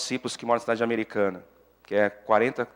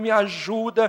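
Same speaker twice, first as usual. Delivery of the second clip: higher-pitched shouting; 11 semitones higher than usual. Retelling voices heard while praying at night: imitating people shouting. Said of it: "pessoas gritando".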